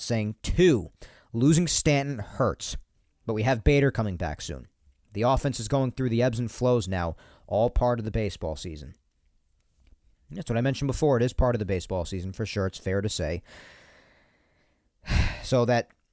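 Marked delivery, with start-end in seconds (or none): none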